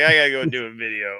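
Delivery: put-on tipsy presenter voice. Mocking the video's host as if he had a couple of drinks: imitating a tipsy video host. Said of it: "it's like he had a couple of drinks and he's like".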